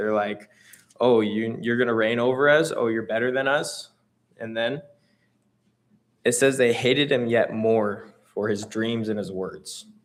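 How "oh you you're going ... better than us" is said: mock snide, scoffing, sarcastic mocking jeer. Retelling how the brothers question a dreamer: imitating sarcastic brothers. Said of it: "They're being sarcastic".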